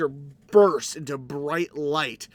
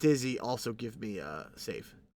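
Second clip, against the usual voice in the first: ordinary talk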